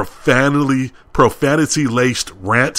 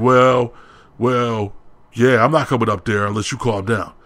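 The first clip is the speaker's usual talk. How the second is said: plain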